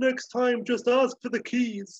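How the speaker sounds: put-on, overcome with feeling, very high voice. Retelling a movie scene of Doc hugging his son Jules, acting out emotional Doc.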